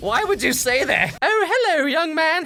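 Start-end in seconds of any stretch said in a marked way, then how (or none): 1.2-2.4 put-on high-pitched old British lady voice. Recapping a film scene of Daniel disguised as an old lady: Mrs. Doubtfire old-lady voice. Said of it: "Hey, why are you so big and ugly".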